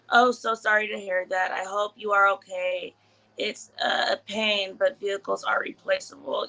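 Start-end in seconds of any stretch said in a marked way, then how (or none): none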